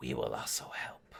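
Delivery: hushed, soft whisper. Voicing a familiar voice speaking into a character's head: whispering. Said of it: "this familiar voice whisper".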